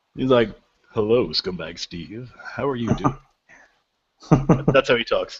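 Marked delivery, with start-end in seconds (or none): 1.0-3.2 very sexy, seductive put-on voice. Speaker imitating how a contact greets them, put-on sexy voice. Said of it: "He's got a very sexy voice".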